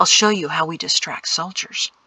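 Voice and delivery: ordinary delivery, nothing marked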